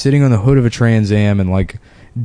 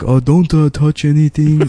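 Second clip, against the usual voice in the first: fake unhinged man's voice; 6 semitones higher than usual. Complaining about a guy with cameras everywhere, imitating the Korean guy's voice. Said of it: "We got that great voice".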